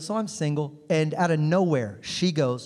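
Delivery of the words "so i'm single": ordinary delivery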